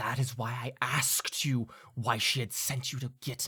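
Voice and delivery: words squeezed out through a clenched jaw. [name] answers before any of the others have a chance, speaking through gritted teeth. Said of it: "kind of like through gritted teeth".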